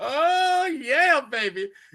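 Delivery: mock very high-pitched, thrilled, excited whoop. Retelling a courtroom scene, imitating an excited cheer. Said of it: "Matt got excited, like".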